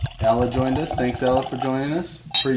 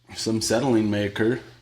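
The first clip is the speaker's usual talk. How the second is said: usual speaking voice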